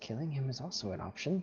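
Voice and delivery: muttered under the breath. Repeating a character's line when asked what he said: muttered under his breath. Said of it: "under his breath, slightly says".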